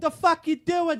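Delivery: very high, loud, put-on Boston accent. In a role-play, a character confronts someone in a Mothman outfit, Boston accent. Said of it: "I got a Boston accent all of a sudden".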